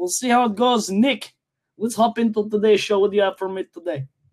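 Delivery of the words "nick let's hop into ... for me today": chatty, talkative delivery in a Russian accent. Podcast host handing over to co-host Nick, in a Russian accent. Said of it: "I am doing it in Russian now".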